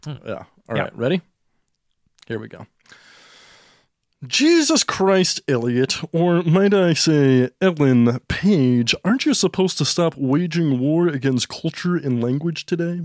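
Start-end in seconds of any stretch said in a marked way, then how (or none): 4.3-13.0 put-on, slightly froggy voice, every word over-enunciated. Playing Jordan Peterson addressing Elliot Page, as a Jordan Peterson impression. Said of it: "I'm going to be Jordan Peterson. ... He's a little Kermit the Froggy, but he also... over enunciates everything he says".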